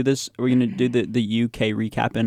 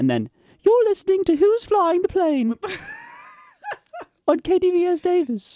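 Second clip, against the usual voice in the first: much higher-pitched, louder put-on voice. Radio host repeating the station ID in a second voice, higher-pitched. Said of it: "you speaking in a higher pitched voice".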